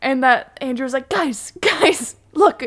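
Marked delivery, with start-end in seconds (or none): 1.1-2.6 put-on grave, serious voice, pitched up. Retelling a warning about taking photos: Andrew's serious voice. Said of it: "when Andrew puts on his serious voice".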